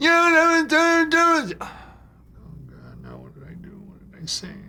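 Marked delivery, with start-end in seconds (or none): 0.0-1.6 very high, shrill, drawn-out scream. Retelling a call where Stark screamed at the speaker: imitating a high-pitched scream. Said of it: "He was always screaming at me. His voice would go up an octave".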